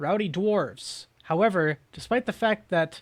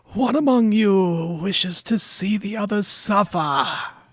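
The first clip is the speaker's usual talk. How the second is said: put-on ragged, raggedy old man voice; 4 semitones higher, 6 dB louder than usual. Voicing a raggedy old man pointing at the party: raggedy old man voice. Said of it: "a raggedy old humanoid man".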